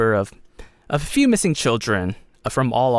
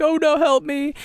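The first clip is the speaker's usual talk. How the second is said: put-on very high-pitched sobbing, crying child voice. Voicing a kidnapped child who drops his holy symbol: child crying for help. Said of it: "And Koa's crying".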